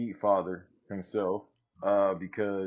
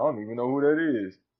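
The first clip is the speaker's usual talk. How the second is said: mock country-style voice; 4 semitones higher, 5 dB louder than usual.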